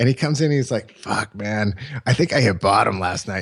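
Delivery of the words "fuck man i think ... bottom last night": rough, heavy, big gravelly voice. Retelling what Kevin said when he came in a mess: Kevin's big gravelly voice. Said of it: "he had this big gravelly like voice".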